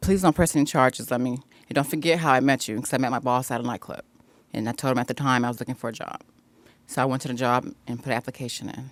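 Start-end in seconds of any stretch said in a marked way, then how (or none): none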